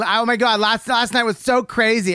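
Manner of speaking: brash, loud, drawn-out chatter. Mocking a loud woman arriving at a restaurant: imitating a loud woman. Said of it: "they don't have that, that restaurant voice".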